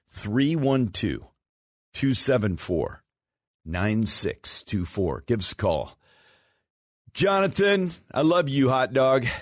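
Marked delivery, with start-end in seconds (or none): 0.2-5.3 unhurried, slow delivery. Host repeating the call-in phone number for listeners, said slow. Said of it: "I'll say it slow".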